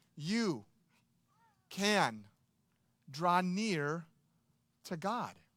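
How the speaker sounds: very slow, halting, every word set apart. Speaking to listeners this morning, saying a familiar phrase very slowly. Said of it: "let me just say it very slowly for you".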